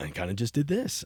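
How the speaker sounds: smooth radio DJ voice. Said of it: "Did you have a D J voice?".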